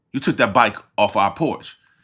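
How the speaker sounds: ordinary talk, nothing marked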